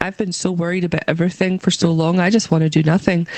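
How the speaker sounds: normal talking voice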